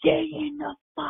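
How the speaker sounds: very high, top-of-the-lungs screaming. Retelling a woman screaming at her young son, imitating a mother screaming. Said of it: "screaming at him like to the top of her lungs".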